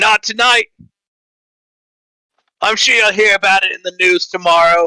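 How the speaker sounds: loud voice, too loud. In a tabletop game, a player's character answers another character's question, speaking too loudly. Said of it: "saying this, these things so loudly".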